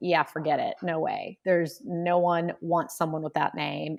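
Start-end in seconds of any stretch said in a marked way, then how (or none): none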